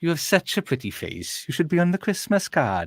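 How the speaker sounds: put-on Welsh-accented delivery. Reading out the next film quote to the group, in a Welsh accent. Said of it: "It's the accent's throwing me off".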